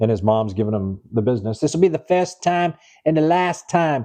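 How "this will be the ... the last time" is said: horrible put-on Boston accent, pitched higher. Acting out a mom scolding her son in a detention scene, horrible Boston accent. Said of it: "That's a horrible Boston accent".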